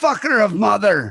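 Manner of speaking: furious high yelling. Retelling a fight in New York, the speaker is imitating a yelling cab driver. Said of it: "He kept yelling".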